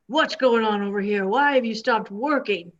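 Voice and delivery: gruff, rough-edged, demanding voice. Storyteller voicing a figure who confronts the workers in the story, gruff voice. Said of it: "a gruff voice".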